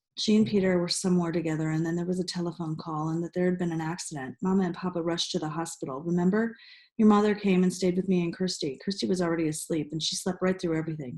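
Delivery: plain reading voice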